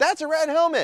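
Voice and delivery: very high, loud shout, tossed off casually. Retelling calling out to a dad and kid on a bike trail: retelling a shout. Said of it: "You yelling at me?".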